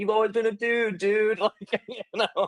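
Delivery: very high, bro-y dude-bro voice. Retelling how supportive coworkers affirmed the speaker: imitating dude bro-y coworkers. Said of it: "kinda dude bro-y way".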